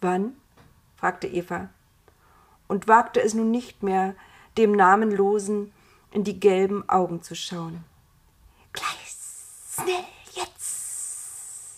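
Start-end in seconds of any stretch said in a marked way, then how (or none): 8.7-11.8 very quiet, soft hissing whisper. The nameless one answers Eva's question, hissed. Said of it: "zischte das namenlose".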